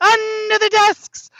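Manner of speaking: high, slow, loud teacher yell. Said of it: "she said it exactly like that".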